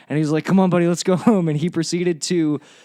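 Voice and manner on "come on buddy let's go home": put-on drunken man speech, higher and louder. Retelling what a hammered comic said offering a ride home: imitating a drunk man. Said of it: "He's really hammered".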